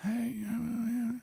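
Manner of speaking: drowsy, half-awake, soft and very high voice. Asked by another speaker to give a sleepy voice, the speaker does: sleepy voice. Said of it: "Give me sleepy voice".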